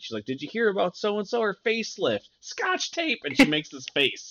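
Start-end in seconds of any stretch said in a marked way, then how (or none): 0.2-3.2 mock loud, high, swooping holler. Retelling a woman yelling gossip to someone across the street: retelling a yell. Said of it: "She's yelling to Miss Patty from like across the street".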